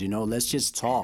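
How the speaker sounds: ordinary talk, nothing marked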